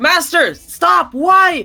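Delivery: shrill, very high, loud shouting. Voicing a character named Archer who calls for a fight to stop: yelling. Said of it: "Archer just yells".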